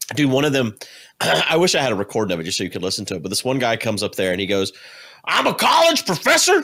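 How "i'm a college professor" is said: very high-pitched, loud shouting. Retelling a man addressing elected officials: retelling a man yelling. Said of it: "And he's like yelling".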